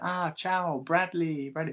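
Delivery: slow, friendly, high voice. Retelling how a racing hero greeted them: imitating Rossi. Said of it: "he literally went".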